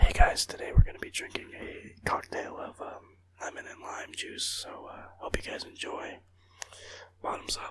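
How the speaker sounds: soft ASMR-style whisper. Introducing a shot of lime juice to viewers, ASMR-style voice. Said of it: "I'll do an A S M R for you guys".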